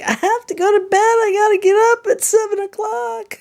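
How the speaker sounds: very high, frantic squeak. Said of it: "'cause I'm like".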